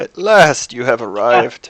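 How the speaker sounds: put-on loud old crone voice crackling like dry weeds. Narrating the crone speaking, in a crackling crone voice. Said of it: "her voice crackles like dry weeds".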